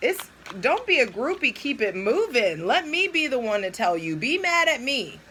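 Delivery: high, neck-straining, strained yell. Addressing listeners about people fighting in front of their children, yelling. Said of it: "I'm yelling".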